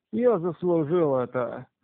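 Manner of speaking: ordinary delivery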